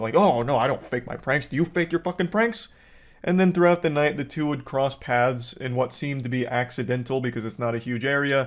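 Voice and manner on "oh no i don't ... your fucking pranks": acted-out defensive pushback, sounding cornered. Retelling the other YouTuber's reaction to trolling: imitating Brent Rivera getting defensive. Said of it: "He'd be like a cornered animal".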